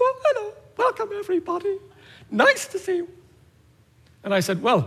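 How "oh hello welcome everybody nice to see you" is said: very high, tiny, timid, meek little voice. Recalling being told he sounded like a little pussycat: imitating his own meek voice. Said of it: "you sounded like a little pussycat".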